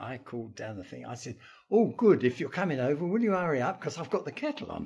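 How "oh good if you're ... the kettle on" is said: put-on breezy, cheerful teasing tone in a raised voice. Retelling his own reply over the radio: retelling a teasing reply. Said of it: "larking about".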